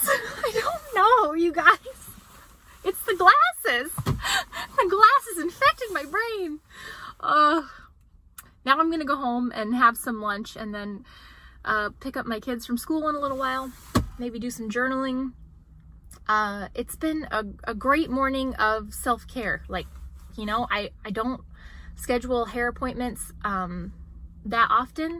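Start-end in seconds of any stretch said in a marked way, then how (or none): 0.1-6.6 high, slow, silly put-on voice. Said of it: "Why am I talking like this?".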